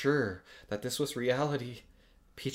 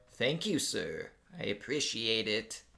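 reluctant, grudging delivery; 4 dB quieter than usual. Narrator reading a story, a character replying reluctantly. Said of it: "then reluctantly replied".

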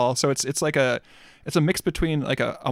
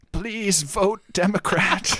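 slow, deliberate, pitched-up, drawn-out pleading delivery; 5 semitones higher than usual. Asked for a best RBG impression, the speaker answers: Ruth Bader Ginsburg impression. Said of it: "Can you give me your best RBG impression?".

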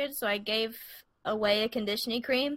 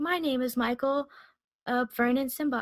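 put-on soothing, calm voice. Imitating a friend's podcast intro: imitating Michael's soothing voice. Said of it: "she has such a soothing voice".

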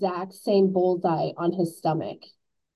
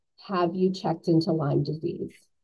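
put-on very quiet, hushed voice; 3 semitones lower, 3 dB quieter than usual. Retelling a nurse's question on the phone: imitating a very quiet voice. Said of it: "very quietly in the phone".

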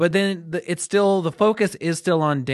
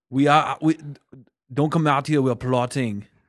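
put-on Austrian accent. Imitating wrestling villains plotting backstage: Hans and Franz voice. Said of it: "You sound like the Kevin Nealon and Dana Carvey".

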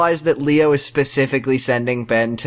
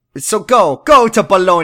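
exaggerated Italian accent, higher and louder; 6 semitones higher, 5 dB louder than usual. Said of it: "super Italian accent".

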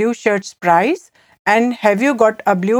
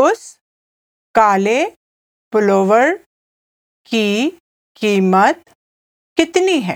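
very slow, halting phrase broken with pauses. Teaching a Hindi phrase, the speaker repeats the example sentence, said again slowly. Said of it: "I'll say it again slowly".

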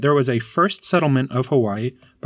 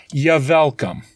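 put-on German accent. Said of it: "I genuinely thought you were doing a German accent".

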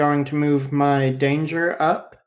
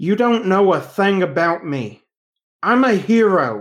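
dead serious and grave, "hero" drawn out; 5 semitones higher, 4 dB louder than usual. A character looks her dead in the eyes and answers, uncharacteristically serious. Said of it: "an uncharacteristically serious look says".

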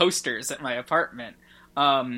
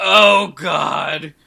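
mock, very loud cry of dismay; 2 semitones higher, 12 dB louder than usual. Retelling a character's reaction to hearing a name: imitating a dismayed reaction. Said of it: "the worst, like, possible reaction to that".

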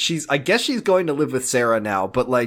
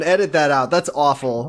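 ordinary talk, nothing marked

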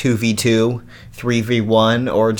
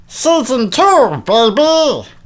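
very high, loud cartoon voice swinging wildly in pitch; 13 semitones higher, 5 dB louder than usual. Wrapping up talk about an episode: Rick impression from Big Mouth. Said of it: "That's my decent Rick impression from Big Mouth".

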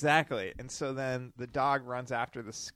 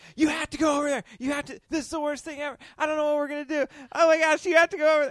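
frantic, panicked, very high, loud scream; 9 dB louder than usual. Retelling the night the dog got skunked, imitate Lauren screaming. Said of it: "She just kept saying like".

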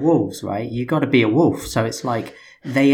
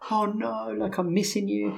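mock crying, higher and quieter; 9 semitones higher, 8 dB quieter than usual. Retelling a girlfriend's reaction to his longer jail stay: imitating someone crying. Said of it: "And she's crying".

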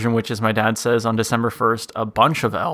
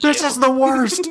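put-on yell, higher. Retelling yelling downstairs at dad as kids: imitating yelling downstairs. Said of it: "we wanna yell down there".

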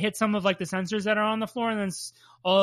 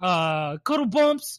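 put-on New York accent. Speaker tries to repeat a line from the show in Toad's New York accent. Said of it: "Like a New York accent".

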